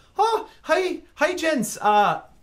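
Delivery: anxious, nervous voice, very high and very loud. Voicing a character greeting the group as they walk in, nervous voice. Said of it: "he's very clearly like nervous".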